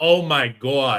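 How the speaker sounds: put-on Boston accent. Describing how a man who lost his thick accent still says this, Boston accent. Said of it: "It's like a Boston thing".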